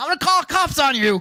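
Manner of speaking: put-on very high, shrill old man's yell. Retelling being yelled at by an old man: imitating an old man yelling. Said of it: "this old man yelling at me".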